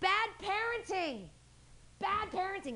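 mock drawn-out yell. Speaker retelling what he yelled across the street at parents: retelling a yell. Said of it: "I'm yelling from across the street".

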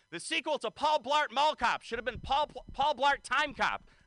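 put-on shrill, very high, crazy ranting yell. Retelling a crazy guy on the bus: imitating a crazy guy yelling. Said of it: "a crazy guy gets on and starts yelling".

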